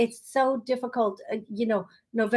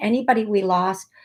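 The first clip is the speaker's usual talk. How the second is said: ordinary talk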